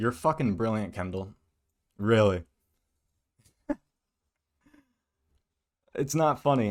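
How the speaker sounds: laughing while talking. Reacting to a commentator's claims: laughing while talking. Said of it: "I'm sorry I'm laughing".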